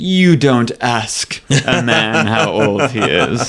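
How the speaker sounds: very slow, drawn-out delivery.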